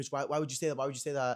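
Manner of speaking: acted-out, really mad, demanding, accusing outburst. Retelling how a quarantined man reacted to being reported, imitating someone angry. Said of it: "He's like so mad at me".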